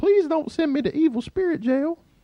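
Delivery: very high, tiny, squeaky cartoon character voice. Voicing a demon in a story, in a Mickey Mouse voice. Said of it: "the demons sound like Mickey Mouse".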